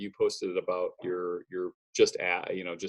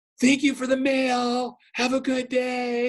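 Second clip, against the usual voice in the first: very high, loud, slow, drawn-out hollered yell; 5 dB louder than usual. Retelling how a four-year-old calls through the mail slot: imitating a child yelling. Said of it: "but he yells".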